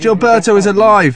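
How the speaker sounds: ordinary delivery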